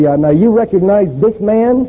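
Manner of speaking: put-on New York accent. Retelling a police lineup, the man running it questions a witness: New York accent. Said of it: "they're usually a New York accent".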